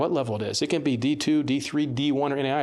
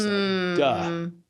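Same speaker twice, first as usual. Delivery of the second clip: normal talking voice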